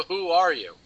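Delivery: put-on stuttering voice. Reading a comic line aloud: Atrocitus stuttering. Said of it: "He actually stutters".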